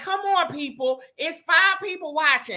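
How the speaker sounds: very high-pitched yelling. Urging viewers to join the live chat: yelling at the chat. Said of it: "stop yelling at 'em".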